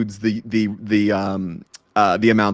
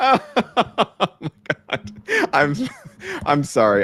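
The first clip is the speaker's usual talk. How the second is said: talking through laughter, higher pitch; 9 semitones higher than usual. Apologizing as corrections arrive in real time: laughing while talking. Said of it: "I'm laughing here because".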